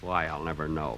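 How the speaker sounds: very low, quiet mutter under the breath. Told to read the father's part in a scene, mumbling. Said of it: "Stop mumbling".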